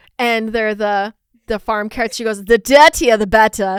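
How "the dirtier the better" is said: loud, booming put-on British accent. Retelling what a British woman said: imitating a British accent. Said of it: "the first quote that I'll do is British".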